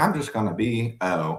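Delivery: plain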